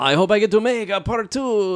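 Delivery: imitated thick Canadian French accent. Retelling what a director said in an interview: thick canadian french accent. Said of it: "with his fucking thick Canadian French accent".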